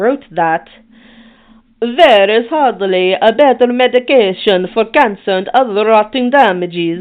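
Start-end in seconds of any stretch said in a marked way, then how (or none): 1.8-7.0 loud, awful, fake put-on Italian accent. Quoting an Italian doctor born in the fifteen hundreds: awful put-on Italian accent. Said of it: "That was that was my Italian accent".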